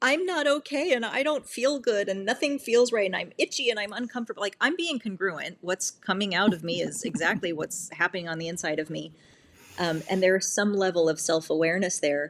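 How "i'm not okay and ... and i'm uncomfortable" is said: high-pitched yelling in a full tantrum. Speaker describing their self-awareness, acting out their own tantrum yell. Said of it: "having a tantrum and yelling like".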